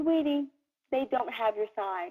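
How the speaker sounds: soft, tender, affectionate loving tone. Retelling a woman at a shopping cart speaking to the guy, imitating a loving tone. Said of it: "very lovingly says to him".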